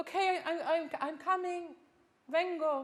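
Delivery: high, loud, flustered delivery. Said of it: "Be nice to have this sensation of".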